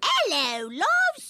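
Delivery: fake British accent, high. A caller on the phone greets the auction crowd, fake British accent. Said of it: "everything I hear in a British accent".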